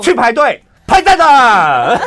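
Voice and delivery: very loud, very high, shrill hollering. Retelling her brother asking a staff member where to queue: retelling a loud call. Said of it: "就这个音量".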